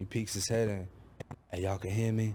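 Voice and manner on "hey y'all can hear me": put-on whisper, lower pitch. Retelling a sergeant peeking into the prison bus: imitating a whisper. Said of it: "He's whispering".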